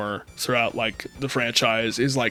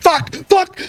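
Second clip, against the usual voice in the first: very high, shrill, panicked, frantic screaming; 6 dB louder than usual. Describing a man screaming at his computer, unheard: retelling a scream. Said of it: "so he's like screaming at his computer".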